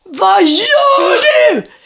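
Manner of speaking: very high, loud, disgusted shriek. Retelling seeing a man blow his nose onto the ground, retelling a scream. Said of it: "Och jag bara skriker".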